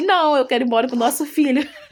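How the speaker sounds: words broken up by laughter. Retelling a painful hospital memory, laughing while talking. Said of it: "Eu tô rindo agora".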